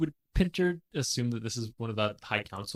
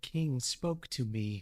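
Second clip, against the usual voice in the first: whispered, quieter; 8 dB quieter than usual. Voicing a character who grabs another and whispers. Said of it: "just whispers".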